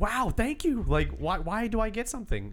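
mock squeaky-high voice, thrilled, super excited delight. Retelling getting something from a woman, acting out being super pumped. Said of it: "I was super pumped".

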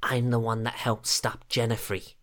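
hushed, whispered voice. A player's character walks up to the knights and speaks to them: hushed tone. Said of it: "in a hushed tone".

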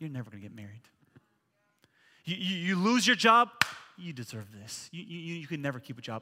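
low, half-whispered, taunting tempter's voice. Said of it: "and he'll whisper".

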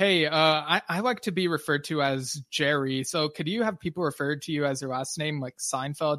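normal talking voice

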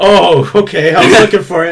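put-on drunk voice. Retelling a drunk friend asking for his charger: imitating drunk Chandler. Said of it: "he's, like, way drunk".

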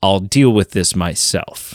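put-on angry villain voice. Describing an armored, caped figure walking to a doorway, put-on angry Darth Vader voice. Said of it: "in this like angry, almost very Darth Vader-esque voice".

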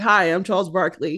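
plain

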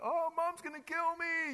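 put-on high, loud, panicked child screaming.

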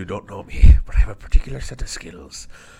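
very loud, booming, overly Irish voice. Joking around, doing a Liam Neeson impression. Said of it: "I thought I was doing Liam Neeson".

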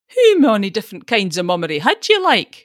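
loud, scornful sneering tone. A woman answering a man's rebuke, sneering. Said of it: "sneered Jean".

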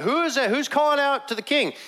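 put-on very high, panicked, alarmed shout. Retelling a sleeping camp's alarm as a guard calls out: imitating a shout. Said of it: "Abner shouts out".

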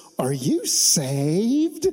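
put-on Southern accent, swooping tune, saved pulled long. Retelling a man walking up to a smoking hotel worker: southern accent. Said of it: "In like the best Southern accent".

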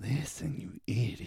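imitated whisper. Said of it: "I love how he whispers that".

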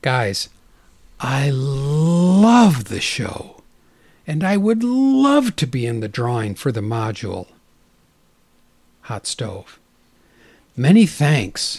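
theatrical, slow, swooping emotional reading, love drawn out. A host reads out a listener's typed message aloud as a dramatic reading. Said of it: "so I'm going to bring that out because I've been studying acting".

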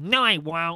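loud, insistent, stubborn tone. Retelling a friend's brother insisting he can climb the roof: imitating Keegan. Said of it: "That's a very good Keegan impression".

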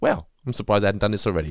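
ordinary talk

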